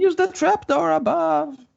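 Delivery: screaming goblin voice.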